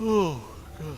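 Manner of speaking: high-pitched words pushed out through a yawn. Commentating a game late past bedtime, yawning. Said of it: "Excuse me for yawning".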